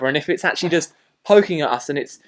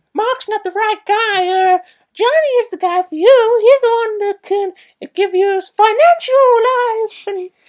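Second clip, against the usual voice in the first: very high voice, like a cartoon; 4 dB louder than usual. Quoting Lisa's mother from a film: Mickey Mouse voice. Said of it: "why did that sound like Mickey Mouse".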